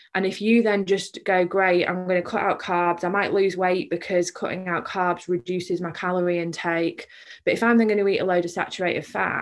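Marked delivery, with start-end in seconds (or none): none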